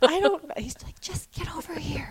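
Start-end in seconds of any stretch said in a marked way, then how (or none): 1.0-2.1 hushed whisper, under the breath. Recounting how a man whispered for the speaker to come over, retelling a whisper. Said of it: "So he's whispering to me to get over".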